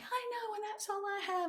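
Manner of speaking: mock-angry voice. Recounting their reply to a whisper from God, retelling an angry retort. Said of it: "it was like he whispered to me".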